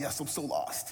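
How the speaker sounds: put-on crying voice. Retelling answering a lady who asked if they were lost: imitating own past crying. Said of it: "I start crying".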